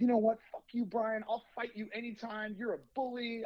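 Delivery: mock furious, high, loud raging outburst, losing it completely. Retelling a man's outburst at the speaker, acting out him going nuts. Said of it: "He goes nuts again".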